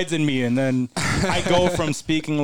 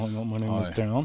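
imitated clenched-teeth voice, lower, quieter, slower; 6 semitones lower, 6 dB quieter than usual. Describing how a man talks, imitating Dan through clenched teeth. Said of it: "like he doesn't like open his teeth at all".

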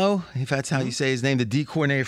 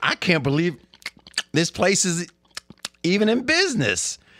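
mouth-full mumble, halting, broken up, pitched up; 5 semitones higher than usual. Retelling a friend's remark over a steak dinner: imitating Fez talking with mouth full. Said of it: "he's got steak in his mouth at the time he's saying this".

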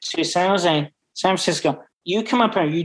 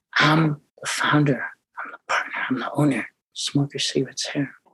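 low, confiding whisper close to the ear; 3 semitones lower, 3 dB quieter than usual. Retelling whispering into someone's ear across the bar: retelling a whisper. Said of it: "I whispered into his little ear".

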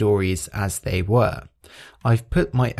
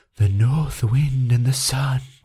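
mock-breathy voice, pitched higher; 2 semitones higher than usual. Recalling a linguistics professor demonstrating to his class: imitating breathy voice. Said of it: "something called breathy voice".

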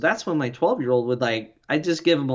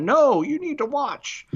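play-acted very high, drawn-out parent yelling; 11 semitones higher than usual. Retelling the parents' reply to the kid: imitating parents yelling. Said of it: "the parents yelling out".

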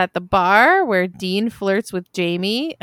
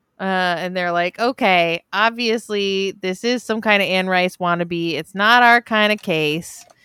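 ordinary talk, nothing marked

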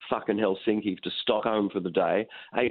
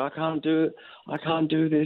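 mock tearful breakdown, high, crying, defeated; 7 semitones higher than usual. Retelling a morning too exhausted to work, imitating own past crying. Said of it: "I was crying. I was going".

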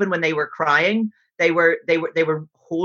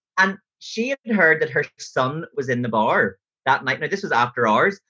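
ordinary delivery

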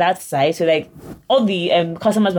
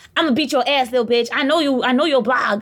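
screaming in a man's voice, much higher; 6 semitones higher than usual. Recounting a man's threat during a confrontation, retelling a man's scream. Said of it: "Then he starts screaming".

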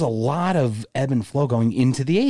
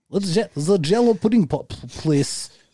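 put-on Czech-accented voice, higher; 6 semitones higher than usual. Joking about things a celebrity told them, doing a Bill Cosby accent. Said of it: "That's pretty good impression, right? Like".

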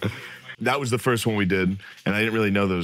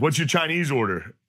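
play-acted mad, drunken voice, pitched up; 6 semitones higher than usual. Retelling how a drunk producer confronted him: imitating someone asking angrily. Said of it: "He's mad".

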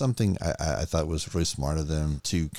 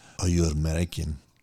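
seductive, sultry put-on Eastern European woman's accent. Retelling what a woman said to a man approaching her, sultry Eastern European voice. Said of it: "she says to him with this Eastern Sultry. European voice".

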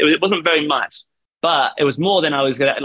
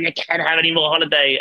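imitated husky female voice; 3 semitones higher than usual. Quoting the speaker's manager refusing holiday, imitating Claire's husky voice. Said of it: "she had like a really husky voice".

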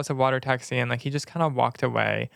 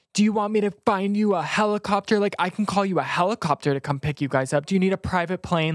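put-on, high, half-yelled ranting; 6 semitones higher than usual. Retelling a quarrel with a man at a restaurant: imitating someone yelling. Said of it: "literally yelling at me in front of this whole entire restaurant".

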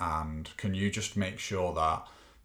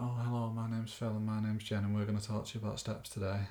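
put-on stiff, bland, nervous delivery, quieter; 3 semitones higher, 4 dB quieter than usual. Imitating their own nervous first podcast episode: imitating their own nervous intro. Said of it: "a bit like".

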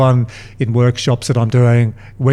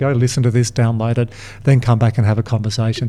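ordinary talk

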